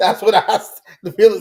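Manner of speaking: talking through laughter. Reacting to another speaker's joke, laughing while talking. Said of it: "I can't even stop laughing to say this".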